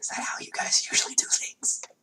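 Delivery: hushed, breathy whisper. Voicing Lilith, who looks at the others: whispering.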